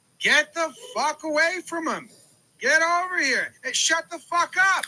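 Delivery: angry coach-style yell. Describing a pitching coach coming out to yell at a player, retelling a coach's yell. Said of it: "yell at him like".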